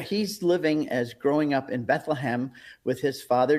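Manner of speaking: ordinary talk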